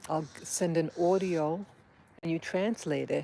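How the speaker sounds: plain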